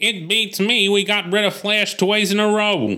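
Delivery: put-on high-pitched burrowing mole character voice. Reading a story scene in the gang's hideout, doing the mole's voice. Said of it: "I'll do the mole's voice".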